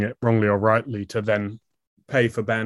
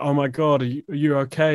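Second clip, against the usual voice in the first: put-on tearful crying voice; 4 semitones higher than usual. Retelling a call from mum the next day: imitating mum crying. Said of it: "crying and being like".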